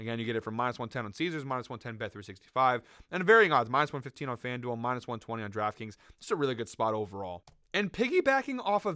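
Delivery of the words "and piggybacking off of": voice cracking up very high. Forty minutes into recording betting picks, the speaker goes on with voice cracking. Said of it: "what a voice crack there".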